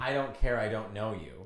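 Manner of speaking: put-on rude attitude. Retelling own reply to a woman who called it mean: retelling own mean reply. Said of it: "You were giving him an attitude".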